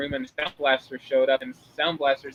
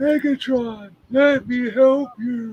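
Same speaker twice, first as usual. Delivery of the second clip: put-on very slow, loud old-man voice; 8 semitones higher, 5 dB louder than usual. Mocking a cartoon villain's new voice as sounding old: imitating Megatron sounding like an old man. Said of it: "he does sound like an old man, like".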